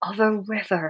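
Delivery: hushed whisper. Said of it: "whispered Mr. Baxter".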